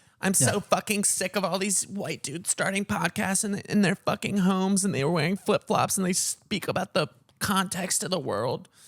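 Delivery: put-on fed-up woman voice, ranting and complaining. Retelling a video of a lady complaining about podcasters, in a put-on woman voice. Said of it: "This is my woman voice".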